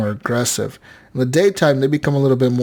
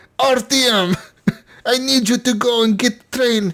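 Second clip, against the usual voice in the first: mock bad Russian-accented English, higher; 12 semitones higher than usual. Mocking the game's English voiceover, imitating a bad Russian accent. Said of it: "they talk like this".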